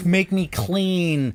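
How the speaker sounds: put-on submissive pleading. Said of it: "very submissive".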